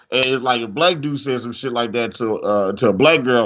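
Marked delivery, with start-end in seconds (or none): none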